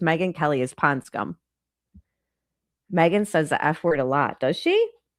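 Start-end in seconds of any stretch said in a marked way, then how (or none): none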